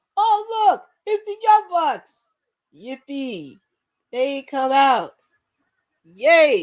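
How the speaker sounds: very slow sarcastic cheering with drawn-out yay. Reacting as the young bucks come out: sarcastic cheering. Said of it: "You know I'm being sarcastic".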